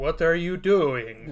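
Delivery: put-on bad Russian accent. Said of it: "Ricky gives a terrible, terrible Russian accent".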